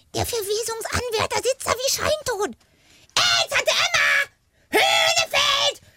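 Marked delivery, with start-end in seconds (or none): 3.1-5.7 high, slow shout. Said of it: "Schrei die alte Frau nicht an".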